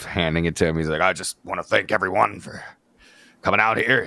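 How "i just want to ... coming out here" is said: choked-up voice, holding back tears. Retelling an awards speech, handing over a lifetime award: imitating Vince choked up. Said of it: "choked up".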